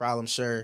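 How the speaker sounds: usual speaking voice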